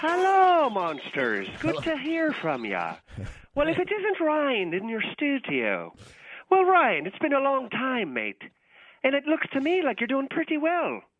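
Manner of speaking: very high, fake, put-on Irish brogue. On a show, caller Patty McPherson greets old rival Ryan: Patty McPherson Irish accent. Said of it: "Is that Irish or Scottish accent?".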